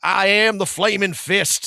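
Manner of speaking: put-on loud, belted, very high-pitched country accent. Quoting the Flaming Fist guys from the original Baldur's Gate: Flaming Fist country accent. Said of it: "with like a really like you know country".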